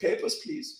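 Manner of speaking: put-on breathy whisper, strong German accent. Imagining an officer in an immaculate uniform walking toward you: strong german accent. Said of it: "in a strong German accent".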